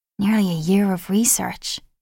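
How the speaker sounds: spoken on a breath, breathed. Suki reacts to hearing of nearly a year of research, breathed. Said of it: "breathed Suki".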